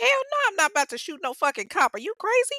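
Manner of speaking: loud disbelieving voice.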